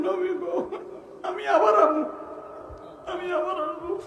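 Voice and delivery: high, weeping, pleading voice, crying throughout.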